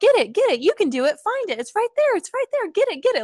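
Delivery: nonstop, very high-pitched, eager cheering. Mimicking an owner who keeps urging their dog to find something: imitating constant eager encouragement. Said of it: "if you're constantly like".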